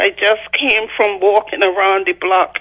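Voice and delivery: ordinary delivery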